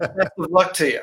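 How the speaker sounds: put-on slight Scottish accent. Retelling a teacher's phone call, imitating Jim Blackley's slight Scottish accent. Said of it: "in his slight, you know, Scottish accent".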